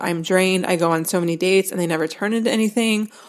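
ordinary talk, nothing marked

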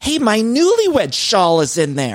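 very high, swooping yelled shout. Recounting running at a man breaking into their car, retelling a shout. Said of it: "I'm shouting".

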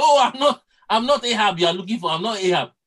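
desperate, alarmed crying out. Retelling a man's shout when they almost killed him in battle, retelling a shout. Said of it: "He shouted".

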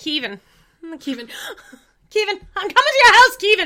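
put-on loud, high-pitched New Zealand accent. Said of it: "You have a very good accent".

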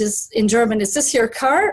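ordinary talk

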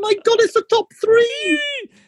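drawn-out, very high, squeaky excited voice. Reacting excitedly to reaching the top three: very high-pitched excited voice. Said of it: "soon you'll only be audible to dogs".

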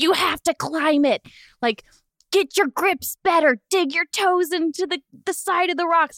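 shrill, very high, shouted yelling. Retelling how he yelled at you while you hung by a rope: imitating someone shouting. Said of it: "And he's just yelling at me".

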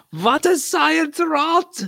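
very high, slow, drawn-out put-on German accent. Imagining a German reacting to a blonde Doppelbock: imitating a German. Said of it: "just some German there going".

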